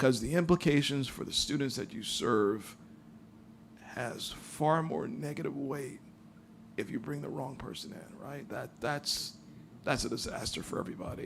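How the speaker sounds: voice catching with emotion. Speaker addressing the board about hiring, getting choked up. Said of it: "excuse me for getting choked up".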